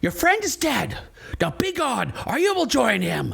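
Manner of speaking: distant, high-pitched, rasping woman's voice. Voicing a woman behind a door warning the party: female voice from another room. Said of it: "a female voice from the other side of the room that says".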